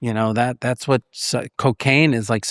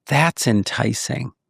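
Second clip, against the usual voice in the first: ordinary delivery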